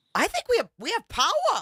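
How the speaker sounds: put-on Rhode Island accent with swooping sing-song tune. Retelling what a neighbor said when the power came back: imitating a Rhode Island accent. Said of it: "this accent from Rhode Island".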